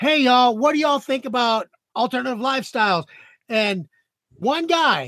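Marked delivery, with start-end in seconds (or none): 0.0-3.0 hollering out, much higher pitch. Retelling hollering a question out to the crowd before a show: retelling a holler. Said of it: "I just kind of hollered out".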